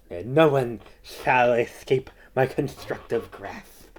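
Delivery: theatrical, exaggerated lisp on every s sound. Quoting how he talks in his theatrical style, with a Sylvester lisp. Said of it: "that's how he talks. It, it kind of sounds more like like Sylvester".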